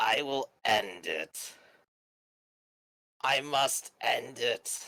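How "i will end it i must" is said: echoing, reverberating, strange guttural monster voice. Narrating a scene, voicing a mysterious monster in a strange, guttural, reverberating voice. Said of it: "in sort of a strange, guttural, reverberating voice".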